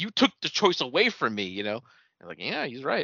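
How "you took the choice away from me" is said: heated, raised, reproachful yell. Retelling a character's line from a show: imitating someone yelling. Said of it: "she just yells at her".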